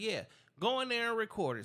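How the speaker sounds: normal talking voice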